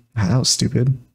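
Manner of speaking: muttered, mumbled under the breath. Showing what they mumble during character development parts, mumbling under the breath. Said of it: "I just mumble on my breath like".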